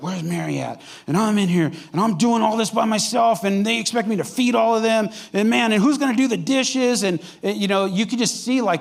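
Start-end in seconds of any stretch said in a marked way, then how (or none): 0.0-7.0 put-on fed-up grumbling with anger building. Retelling the story of a woman overwhelmed with work: acting out growing anger. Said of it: "She's just getting more and more angry".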